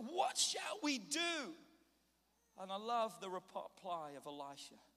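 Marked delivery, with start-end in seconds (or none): 0.0-1.5 high, frantic, panicked cry, acted out. Acting out a servant running to his master: imitating a panicked servant. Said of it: "He's freaking out".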